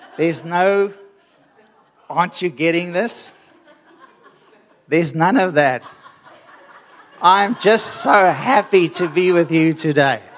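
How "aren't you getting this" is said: put-on exasperated, frustrated tone. Joking to listeners that there's no frustration in the voice today, mock-frustrated. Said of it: "There's no frustration in my voice today".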